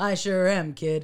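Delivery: ordinary delivery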